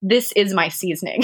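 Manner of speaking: plain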